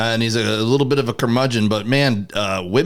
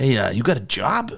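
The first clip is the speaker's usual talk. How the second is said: put-on whisper. Retelling how an older guy at a game approached: imitating a whisper. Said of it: "comes over and whispers at me".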